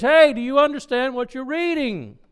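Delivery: high, loud yelling call. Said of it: "yells into the carriage".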